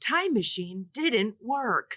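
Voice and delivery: synthetic robot computer announcer voice. Retelling a movie scene where the computer speaks: robot computer voice. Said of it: "we hear the robot computer voice".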